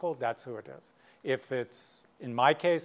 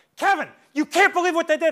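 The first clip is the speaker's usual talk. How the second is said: put-on shrill, very high, very loud, upset screaming kid; 11 dB louder than usual. Retelling how an upset kid in the hallway spoke: imitating a kid screaming. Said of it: "Tyler, you're screaming at me".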